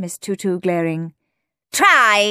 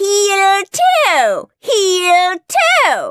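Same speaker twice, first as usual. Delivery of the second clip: very high shrill scream, "toe" drawn out; 11 semitones higher, 4 dB louder than usual. Narrating a teacher giving orders to her class: screamed. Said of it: "When Miss Tutu screamed".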